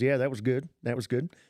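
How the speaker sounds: put-on Southern American accent. Retelling what a churchgoer said after Christmas Eve: imitating a Southern accent. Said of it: "the guy's got a Southern accent".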